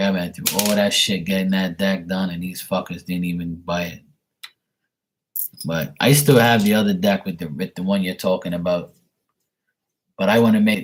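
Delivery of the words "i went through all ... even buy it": ordinary talk, nothing marked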